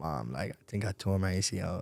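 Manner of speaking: tearful, crying, breaking down in tears. Retelling calling mom after the injury: retelling own crying. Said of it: "I'm just breaking down in tears".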